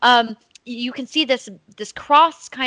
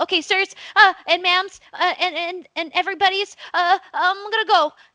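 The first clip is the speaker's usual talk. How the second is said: put-on kid voice, higher; 9 semitones higher than usual. Voicing a kid who tells a shop owner about visitors: kid voice. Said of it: "the kid looks up and he goes".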